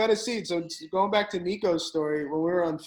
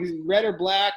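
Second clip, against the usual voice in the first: usual speaking voice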